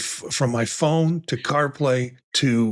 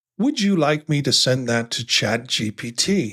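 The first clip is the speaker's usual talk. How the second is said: put-on Australian accent, woman's voice. Quoting the reply from a voice set to an Australian accent, imitating Australian woman accent. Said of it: "My Australian woman accent comes back and says".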